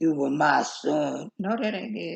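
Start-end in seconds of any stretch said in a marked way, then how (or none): 0.0-1.3 deep, drawn-out, strained bass father voice. Retelling someone's attempt at an impression, doing David's voice, trying to go deep. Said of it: "let me get my David voice on".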